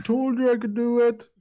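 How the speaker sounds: very high, tiny voice from far away. Game master voicing a character calling from the distance, small distant little voice. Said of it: "you hear a little voice of little voice from the distance going".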